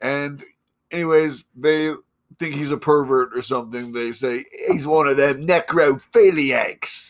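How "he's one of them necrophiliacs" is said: put-on New Zealand accent throughout. A host retelling a story for listeners, doing a Kiwi accent. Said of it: "That was a pretty good Kiwi accent".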